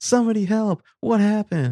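very high, loud, frantic, panicked shrieking. Retelling a scene where a passerby shouts for help: imitating someone screaming. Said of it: "Ava's just screaming".

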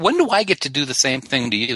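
ordinary talk

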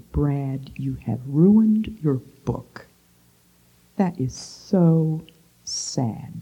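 unhurried, hushed and gentle slow delivery. Retelling what a woman said to Brad: spoken slowly. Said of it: "she spoke slowly".

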